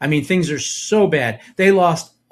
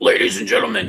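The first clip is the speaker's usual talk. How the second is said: put-on, higher, ranting talk-show host voice; 5 semitones higher than usual. Imitating the other speaker's Alex Jones bit: Alex Jones impression. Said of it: "you really get in there".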